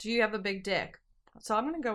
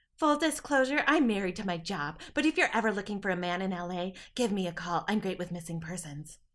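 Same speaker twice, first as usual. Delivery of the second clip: unsettling, sort of creepy man's voice. Reading a story aloud, voicing the man who exchanges numbers, in a creepy voice. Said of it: "I gave him sort of a creepy voice".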